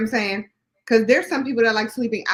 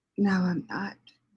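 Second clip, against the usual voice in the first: put-on sexy voice, lower and quieter; 3 semitones lower, 7 dB quieter than usual. Imitating an audio version of Constance's book: imitating Constance's sexy voice. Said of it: "She's trying to sound all sexy".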